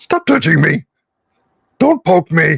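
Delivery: funny video-game orc voice. Describing clicking an orc over and over, quoting its lines in a World of Warcraft orc voice. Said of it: "The original World of Warcraft orc voices are hilarious".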